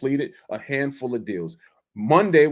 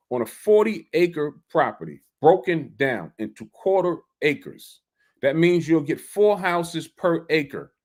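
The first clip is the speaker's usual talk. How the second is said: slow, deliberate, carefully spelled-out delivery. Repeating a property subdivision explanation for listeners, slow deliberate speech. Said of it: "let me say it slower for y'all".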